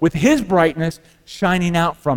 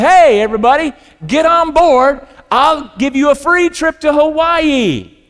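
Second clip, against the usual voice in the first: mock ship captain shout, pitched up; 8 semitones higher, 4 dB louder than usual. Telling a parable of a ship captain calling to swimmers: imitating a captain shouting. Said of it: "the captain shouts out".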